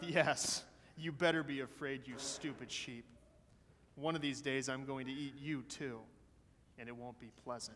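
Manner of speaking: muttering under the breath. Reading a story aloud, the wicked wolf threatens the sheep: muttering under his breath. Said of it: "he'd mutter under his breath".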